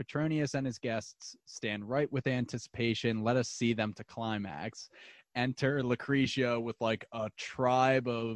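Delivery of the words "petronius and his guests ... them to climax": normal talking voice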